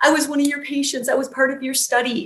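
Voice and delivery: high-pitched, sobbing voice. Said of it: "I'm sobbing. I'm shaking".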